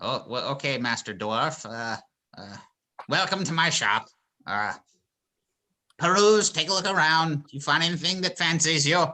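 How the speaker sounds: put-on small, elderly little old man voice. A shopkeeper character welcomes a dwarf into his shop, in a little old man voice. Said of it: "I love the little old man voice".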